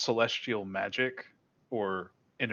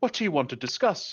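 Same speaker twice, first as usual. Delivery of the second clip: naturally booming, commanding voice, higher; 6 semitones higher than usual. Narrator voicing a woman who takes a seat beside the listener, naturally booming voice. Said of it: "she has kind of a naturally booming kind of voice".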